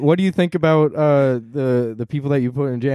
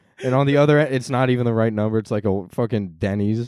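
plain

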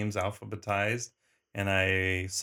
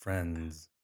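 real deep, dropped bass voice; 5 semitones lower, 6 dB quieter than usual. Showing how the word friends was tried out: very deep voice on friends. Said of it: "I tried to say it real deep".

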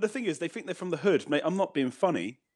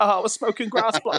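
faked, loud wannabe street-slang voice; 4 semitones higher, 5 dB louder than usual.

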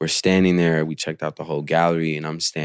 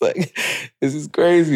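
put-on shaky voice, higher and louder; 11 semitones higher, 5 dB louder than usual. Retelling meeting an admired artist, imitating own shaky voice. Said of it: "my voice is, like, shaky".

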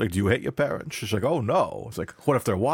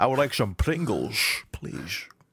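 put-on accent pronouncing S as SH. Imitating a little daughter asking to go on the swings: Sean Connery accent. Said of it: "speaks in a Connery accent from time to time".

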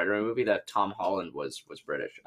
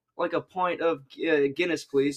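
bad fake British accent; 8 semitones higher than usual. Among friends joking that Americans can't do it, a bad British accent. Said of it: "Is proof that Americans can't do".

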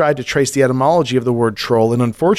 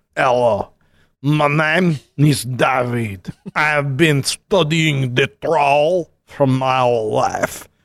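fake half French, half Eastern European accent. Asked by a co-host to start with the troll's origins: half french, half eastern european accent. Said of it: "I'll no longer do this accent as I read".

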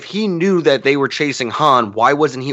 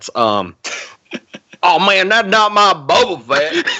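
put-on Southern bigot voice, much higher pitch; 7 semitones higher than usual.

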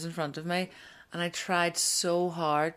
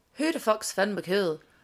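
put-on big man's voice with full, strong Scottish accent; 3 semitones higher than usual. Telling a story, voicing a fella from Scotland hearing gossip, Scottish accent. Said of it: "great accent".

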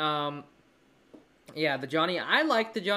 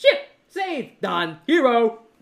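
high, loud mock cartoon hero rattle. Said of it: "It's just like".

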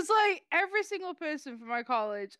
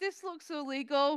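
normal talking voice

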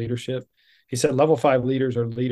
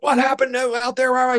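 put-on yelling, higher pitch; 13 semitones higher, 4 dB louder than usual. Retelling how the coach grabbed a face mask: imitating the coach yelling. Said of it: "He's yelling at me".

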